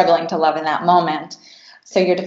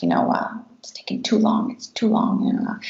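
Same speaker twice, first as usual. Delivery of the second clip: put-on muttering under the breath, much higher pitch; 4 semitones higher, 4 dB quieter than usual. Retelling an impatient man waiting to check into a hotel: imitated muttering under breath. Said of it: "started muttering under his breath".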